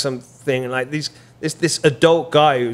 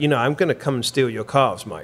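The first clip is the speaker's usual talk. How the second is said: put-on joking, half-creepy tone. Retelling what an old personal trainer would say: imitating a joking, half-creepy tone. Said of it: "jokingly but kind of half creepily be like".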